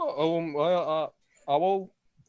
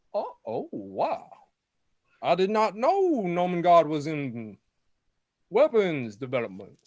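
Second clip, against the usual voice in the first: put-on Kentucky Southern voice, higher; 3 semitones higher than usual. Voicing a character looking into an opened crate: Foghorn Leghorn voice. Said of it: "Foghorn Leghorn".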